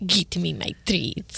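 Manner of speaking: put-on low, hushed, murmured evil Russian accent. Imitating how the owner talks for her Italian Greyhound: Russian evil Kermit voice. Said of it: "the Russian evil Kermit voice".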